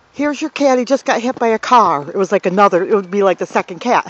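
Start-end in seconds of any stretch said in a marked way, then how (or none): 0.2-2.1 slightly snotty, snooty, uppity tone. Retelling how a girl brought a dead cat to the door: imitating a snotty girl. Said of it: "she was kinda snotty".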